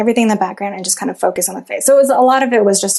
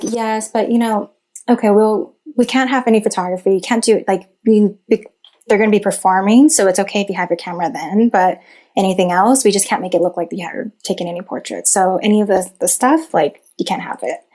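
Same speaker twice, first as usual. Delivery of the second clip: normal talking voice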